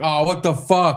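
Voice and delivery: joking fake annoyance. Retelling joking at someone walking by the camera: retelling mock annoyance. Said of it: "we were jokingly just like".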